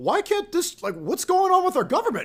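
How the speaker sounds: very high, swooping, rising, swinging pitch. Mocking how a TV host talks: imitating Tucker Carlson. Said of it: "the way he talks, he's like".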